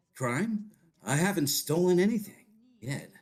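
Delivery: put-on suave raccoon thief voice. Trying a Sly impression after being asked to: Sly impression. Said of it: "I'll try it".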